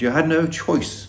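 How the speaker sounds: silly, sarcastic put-on voice. Mocking an excuse he doesn't believe, in a silly mocking tone. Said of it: "I'm obviously using stupid language and a stupid tone of voice".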